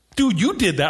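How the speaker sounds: calm explaining tone, reasoning step by step. Retelling a moment of reasoning with a child after an accident: imitating reasoning with a child. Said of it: "reasoning with this kid who doesn't understand me".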